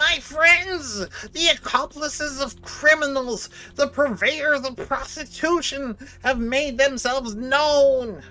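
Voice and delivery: grating, irritating voice. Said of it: "the most annoying voice possible".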